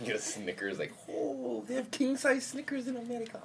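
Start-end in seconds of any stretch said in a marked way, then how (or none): 1.1-3.4 high, loud, badly done fake Japanese accent. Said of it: "that was a very shitty Japanese accent".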